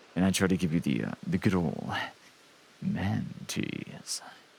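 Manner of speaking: deep, low, breathy near-whispered character voice. Speaker shows another of their many voices: lower voice. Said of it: "my lower voice. Like when I try to do this one instead".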